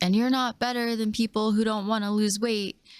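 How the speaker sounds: ordinary delivery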